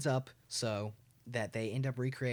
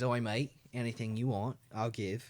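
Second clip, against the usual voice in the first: put-on Australian accent. Playing Kangaroo Jack in a scene you are telling, in an Australian accent.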